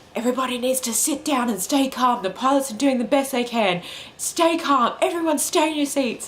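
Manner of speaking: play-acted furious, high, stern announcement voice. Retelling what she said to everyone on the plane, acting out her furious announcement. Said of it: "She was just like ropeable".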